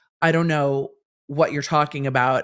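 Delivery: normal talking voice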